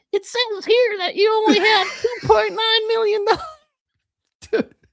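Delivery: very high, loud, froggy puppet voice. Retelling what an old man said, in a Kermit the Frog voice. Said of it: "he's got like a Kermit the Frog voice".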